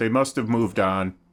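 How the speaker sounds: loud call out across a distance. Voicing a man in the scene: calling out. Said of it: "you hear this guy call out".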